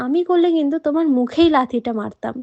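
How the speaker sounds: ordinary delivery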